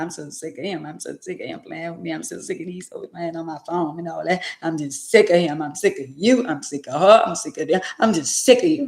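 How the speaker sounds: sobbing, tearful, crying through the words, ranting. Acting out how someone talks while crying about being fed up with a partner, in an imitating crying rant. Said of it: "crying at the same time".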